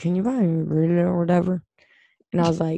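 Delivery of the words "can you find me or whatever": mock mumbling voice, slower. Retelling how a man mumbled a question to her, mumbling.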